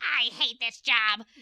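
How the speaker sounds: loud, drenched goblin character voice. Game narrator voicing a drenched goblin, drenched goblin's voice. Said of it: "the one goblin who's now drenched goes".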